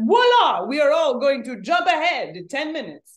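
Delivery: very bad, loud, put-on Italian accent. Explaining the calendar change, quoting Pope Gregory in a very bad Italian accent. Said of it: "This is my very bad Italian accent".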